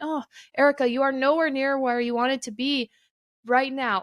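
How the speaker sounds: plain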